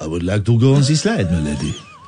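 put-on French accent, dropped very low in pitch. Taking a turn in an accent challenge, doing a country's accent: french accent.

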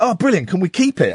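ordinary delivery

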